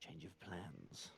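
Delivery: whispered voice. Whispering a quick warning to an ally in character: whispering. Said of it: "I'm going to whisper to Call".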